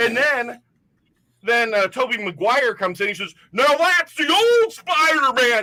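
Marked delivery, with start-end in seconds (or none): 3.5-5.6 put-on excited yell, much higher, slower. Retelling a guy's reaction when a different Spider-Man appears, retelling excited yelling. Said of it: "he's getting super excited".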